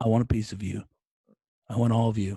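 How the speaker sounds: low, loud, playful tough-guy voice with fake menace. Saying it again when asked, to the guy: mock threatening. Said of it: "we just threatened someone".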